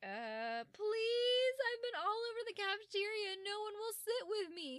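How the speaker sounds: very high, loud, desperate begging and pleading. Acting out a character begging to sit at a cafeteria table: desperate pleading. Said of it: "you sound very desperate".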